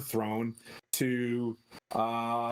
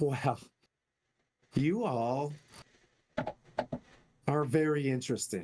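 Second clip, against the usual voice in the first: voice of a giant woman; 2 semitones higher than usual. Voicing the young storm giantess greeting the small folk: Sarissa voice. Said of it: "She's like".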